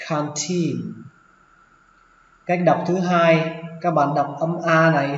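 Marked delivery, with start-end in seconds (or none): 0.1-0.9 put-on low on can, pitch rising on teen. Pronunciation lesson on the word canteen: low can, rising teen. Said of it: "xuống giọng âm đầu tiên và lên giọng âm tin".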